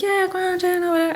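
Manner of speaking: high, light, breezy, casual dismissive tone.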